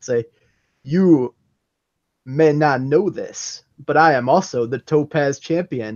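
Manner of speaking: very slow, deliberate, stretched-out, drawn-out words. Speaker announces saying the next line very slowly and low: very slow and low. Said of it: "I'm going to say very slowly and low".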